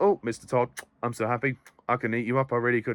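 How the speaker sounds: put-on flat deadpan monotone, no oomph. Criticizing an actress's performance, imitating her line in a flat monotone. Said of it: "She she kind of plays it a little bit flat, like".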